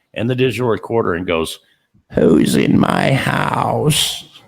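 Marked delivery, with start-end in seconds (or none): 2.2-4.2 put-on gravelly old woman voice, slow. Act out the voice heard on both video and digital recorder, in a gravelly old woman's voice. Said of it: "A gravelly old woman's voice comes across".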